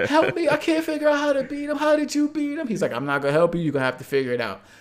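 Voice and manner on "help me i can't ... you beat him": put-on very high, tearful bawling child voice. Retelling begging their brother for help at age six, acting out bawling in tears.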